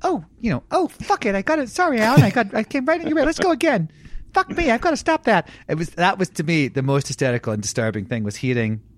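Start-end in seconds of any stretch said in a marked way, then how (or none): 0.0-5.5 high-pitched, bantering puppeteer voice. Retelling what the puppeteers would say after blocking an actor: imitating the puppeteers. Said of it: "they would sort of go".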